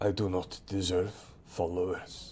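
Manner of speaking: inward half-aside, as if talking to himself. Narrating a character's line, spoken almost as if to himself. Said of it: "almost as if he's speaking to himself".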